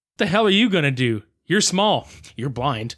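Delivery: normal talking voice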